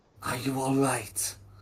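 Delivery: whispering in character voice. Voicing a man checking on the party quietly: whispering in character. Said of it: "will try whispering again".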